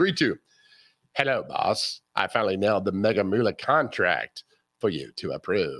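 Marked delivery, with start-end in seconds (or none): 1.1-5.8 very low, deep put-on voice. Reading a comic strip aloud as Dagwood, Hannibal Lecter voice. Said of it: "myself as Hannibal Lecter".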